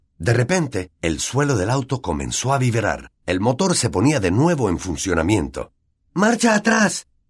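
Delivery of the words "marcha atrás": very high-pitched yell. Harry, in a car being struck by a tree, shouts: shouting. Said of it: "gritó Harry".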